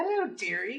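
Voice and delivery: put-on very high-pitched old woman voice. Game narrator voices an old woman at a screen door greeting a player: old woman voice. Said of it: "and there's just an old woman there".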